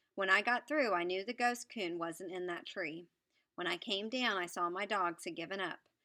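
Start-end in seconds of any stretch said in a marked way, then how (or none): none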